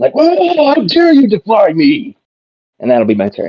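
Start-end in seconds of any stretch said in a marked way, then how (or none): 0.1-2.2 very high, very slow, drawn-out yell. Yelling a challenge at an enemy in character: yelling in character. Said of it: "I'm gonna yell at him".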